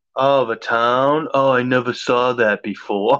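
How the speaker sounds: dry, sarcastic feigned surprise and wonder. Retelling a comment made to friends: retelling a sarcastic comment. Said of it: "I make the sarcastic comment".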